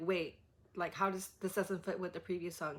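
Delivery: ordinary delivery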